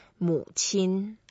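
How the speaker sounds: 母 pronounced with the third tone. Teaching the Chinese word 母亲 for mother: third tone on 母. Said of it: "母 is a third tone".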